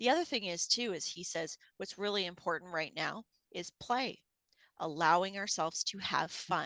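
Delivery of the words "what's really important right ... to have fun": plain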